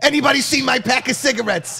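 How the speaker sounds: put-on angry New York woman accent. Showing others a woman's exact way of talking, put on an angry new york lady accent. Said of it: "And that's her exact accent".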